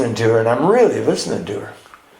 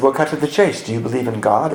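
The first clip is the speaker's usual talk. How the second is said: put-on British accent. Retelling what a woman holding a book said to him: British accent. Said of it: "In this beautiful British accent".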